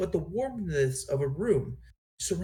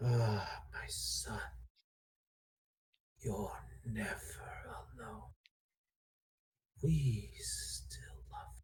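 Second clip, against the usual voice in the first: deep, resonant, hushed whispered motherly voice; 7 semitones lower, 12 dB quieter than usual. Narrator voicing the dragon speaking to the listener in his mother's voice: deep resonating motherly voice. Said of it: "it sounds like your mother's voice, but it has a deep resonating tone to it".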